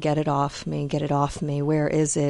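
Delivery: ordinary delivery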